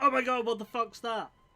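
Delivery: very high, very loud, full-lungs yell. On a call, a speaker shouts as another caller is about to fall asleep. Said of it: "I'm just going to shout at the top of my lungs".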